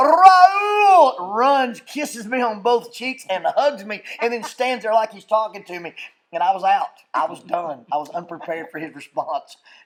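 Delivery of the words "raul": loud, high-pitched yelling cry. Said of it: "And he yells".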